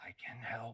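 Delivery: strange hissing stage whisper, every s stretched. Voicing a shadowy figure shifting cables aside, in a hissing, sibilant whisper. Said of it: "strange hissing, sussulent voice that whispers".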